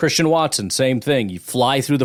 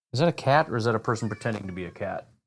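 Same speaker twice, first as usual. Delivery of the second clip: ordinary delivery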